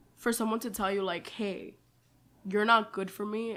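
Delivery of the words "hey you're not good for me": plain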